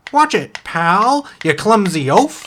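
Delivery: little sassy voice, high and drawn-out. Voicing an oyster under the sand scolding a player: sassy oyster voice. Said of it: "who's this little sassy guy?".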